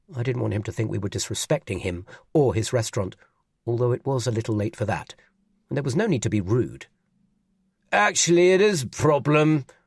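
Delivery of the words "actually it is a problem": put-on slow, sloppy drunken slur, pitched up. Reading a story, a swaying character complains at a restaurant: drunk slurring. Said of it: "Ralph slurred".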